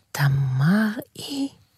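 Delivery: whispering. A narrator reads a character's reply during a dream, whispered. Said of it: "לחש איתמר".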